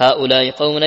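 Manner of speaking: ordinary talk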